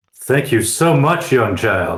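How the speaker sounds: screaming. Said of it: "I'm still screaming".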